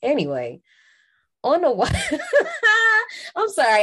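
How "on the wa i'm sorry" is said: high, loud laughter breaking through the words. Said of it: "I'm laughing at my younger self".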